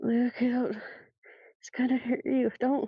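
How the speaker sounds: slurred, half-asleep, frightened, panicked voice. Voicing a character half asleep from a bad dream: panicked, slurred half-asleep plea. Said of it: "a very panicked inhale of breath as he kind of just slurs out".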